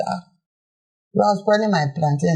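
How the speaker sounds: ordinary talk, nothing marked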